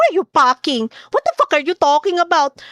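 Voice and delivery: put-on Filipino-accented English. Reading out what a woman wrote, imitating her, Filipino accent. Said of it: "She's gonna sound like this".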